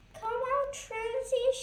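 very high, calling shout. During hide and seek, a friend calls a hidden playmate to come out, shouted. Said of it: "shouted Legs".

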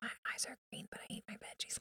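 whispered.

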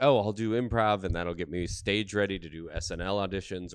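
ordinary talk

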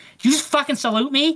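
acted-out anger, shrill, very high-pitched and loud. Retelling a woman's reaction after the speaker saluted her, imitating someone pissed off. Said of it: "She was like pissed at me".

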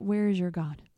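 ordinary talk, nothing marked

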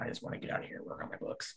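soft, unvoiced whisper.

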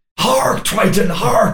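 mock massive ranting outcry, high and screaming. Retelling a film character's massive tirade: imitating a screaming tirade. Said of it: "massive tirade where he's like".

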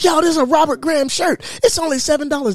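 very high, thrilled, excited shriek. Retelling a find in a thrift store: retelling own screaming. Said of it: "I'm screaming like".

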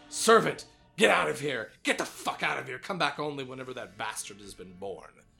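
furious snarl, shouted very loud. Narrating the story, voicing Elizabeth as she glares at you: snarling. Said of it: "she snarls".

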